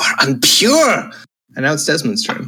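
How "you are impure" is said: high, menacing hissed delivery. Narrating a foe who pins the player and narrows his eyes: hissing. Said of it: "he narrows his eyes at you and hisses".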